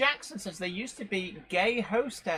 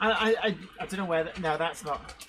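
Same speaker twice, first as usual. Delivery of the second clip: ordinary delivery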